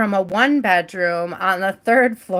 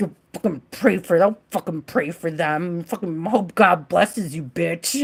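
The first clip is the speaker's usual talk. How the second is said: put-on grudging, reluctant resentment, faster pace; 2 semitones lower than usual. Retelling how they did the prayers begrudgingly, mock-begrudging eye-rolling. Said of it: "I did the work begrudgingly, rolling my eyes with a very".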